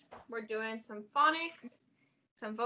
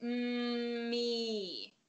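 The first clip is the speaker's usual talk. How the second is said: me drawn out, each sound given equal weight; 3 dB quieter than usual. Showing a learner how to say a word: drawn out slowly, sound by sound. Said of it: "I wanna hear both of those sounds equally".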